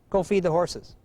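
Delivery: ordinary delivery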